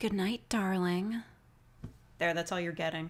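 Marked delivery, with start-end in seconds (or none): 0.0-1.2 put-on anime yandere-style voice. Saying good night darling as requested, yandere voice. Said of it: "in a yandere voice".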